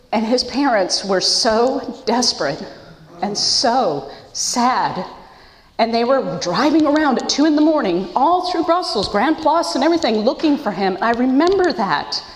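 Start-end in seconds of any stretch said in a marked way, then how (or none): 0.1-10.9 choked-up voice, catching with emotion. Speaker telling a personal story about a family's night search, choked up. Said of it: "And I'm getting choked up".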